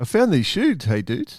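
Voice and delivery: put-on New Zealand accent. Rephrasing someone's line to show how it sounds, in a New Zealand accent. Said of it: "you sound like a Kiwi".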